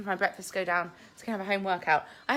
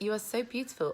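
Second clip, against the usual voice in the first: plain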